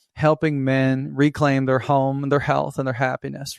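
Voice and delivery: plain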